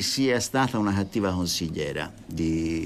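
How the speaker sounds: plain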